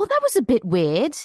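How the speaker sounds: put-on British woman's accent. Retelling what a woman said after a film in a British theater: imitating a British woman. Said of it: "so British".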